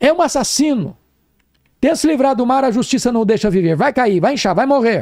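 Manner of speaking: high-pitched, accusing shouting.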